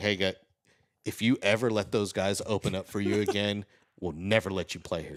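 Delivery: hushed, close half-whisper. Retelling what the general manager half-whispered in their ear: imitating Chris Rivera half-whispering. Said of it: "just whispers into my ear".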